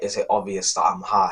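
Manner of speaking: put-on quiet whisper. Retelling a friend's question asked just before class: imitating a quiet whisper. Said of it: "he whispers to me quietly".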